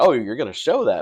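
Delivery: put-on, half-laughing, chuckling, amused tone. Retelling an opponent's reply about being shown on the channel: imitating a chuckling reply. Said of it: "he kinda chuckled like".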